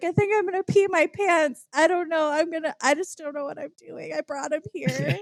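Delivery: mock speaking through tears, high tearful crying voice. Retelling own reaction to the news: retelling own crying. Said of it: "and I'm crying and I'm like".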